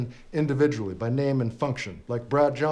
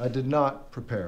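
strong stress on the word not. Planning a line to say, with strong stress on not. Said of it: "put the emphasis on not".

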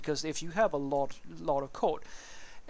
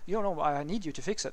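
plain

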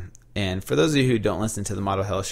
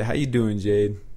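smooth, easy, practised everyday tone. Quoting what a friend says every day: imitating Sean's smooth voice. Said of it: "that's what he says every day".

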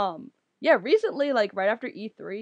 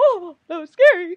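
very loud, squeaky, cracking cry; 8 semitones higher, 10 dB louder than usual. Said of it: "I turned to, like, Mickey Mouse".

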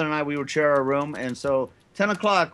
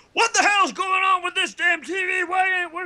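furious, screaming yell. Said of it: "my dad would start screaming".

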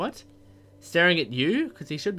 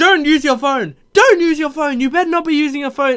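put-on scream, higher and louder; 13 semitones higher, 13 dB louder than usual. Acting out what the driver screams about the phone: imitating someone screaming. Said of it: "He's screaming at me for my phone".

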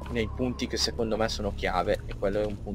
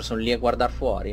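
usual speaking voice

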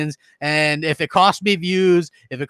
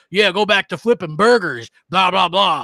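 put-on mocking, ranting tone. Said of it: "When I was up there talking about".

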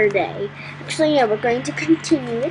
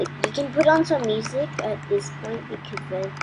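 ordinary talk

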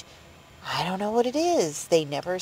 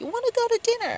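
acted, very high, called-out shout. Retelling how a man called out from twenty paces away, retelling a shout. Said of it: "he just shouts out".

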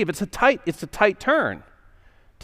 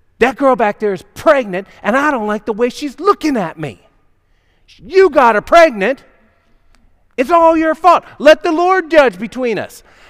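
put-on furious angry outburst, loud and rising; 7 semitones higher, 8 dB louder than usual. Retelling a wife storming out to her husband: imitating an angry accusation. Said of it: "she storms out to the field".

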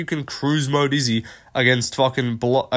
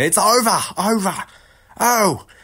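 high-pitched screaming voice. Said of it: "Mark Goddard screaming".

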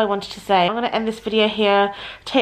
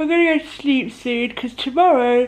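talking through a yawn mid-sentence; 3 semitones higher than usual. Tired near 1 a.m., telling viewers the plan for tomorrow, yawning. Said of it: "I can't stop yawning".

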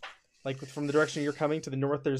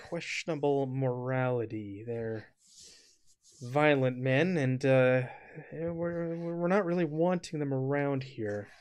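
discreet, hushed confiding delivery. Voicing a guard who glances behind him: lowered voice. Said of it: "kinda lowers his voice".

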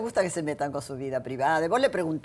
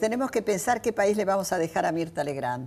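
normal talking voice

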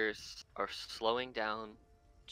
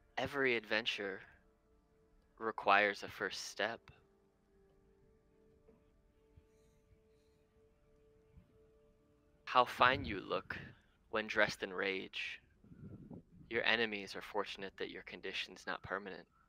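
mysterious, strange disembodied voice. Voicing an unheard voice speaking in a character's head: mysterious unknown voice in the head. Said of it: "You hear it say".

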